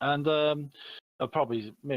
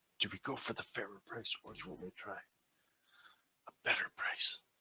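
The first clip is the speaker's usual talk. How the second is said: hushed whisper; 11 dB quieter than usual. Playing a character in a shop, asking companions about the price: whispering in character. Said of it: "I whisper to the set".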